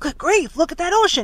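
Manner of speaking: alarmed shout, loud and high-pitched yell. Narrator reading a crewman out on deck alerting the others, yelling. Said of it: "he yelled".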